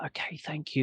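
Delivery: hushed whisper under the breath. Retelling the reply given while sneaking in late: retelling own whispered reply.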